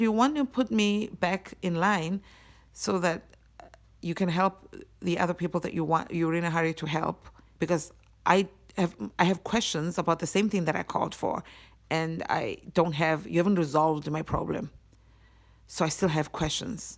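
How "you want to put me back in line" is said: ordinary delivery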